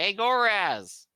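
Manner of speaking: overexcited, loud, excited shouting. Role-playing coming in through the door and greeting goraz, shouting. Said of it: "Why are you shouting?".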